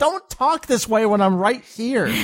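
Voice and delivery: half-screamed, high, mild yell. Recounting a show scene where Bulma screams at him, imitating Bulma screaming. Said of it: "she just screams at him like".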